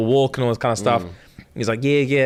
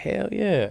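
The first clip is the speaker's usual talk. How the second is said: smooth, effortless, easy voice, pitched up; 8 semitones higher, 5 dB quieter than usual. Retelling a dating show date, imitating a smooth reply. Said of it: "he's smooth with it".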